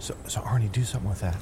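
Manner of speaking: whispered aside.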